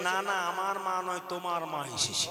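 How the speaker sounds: soft, quiet, sly voice.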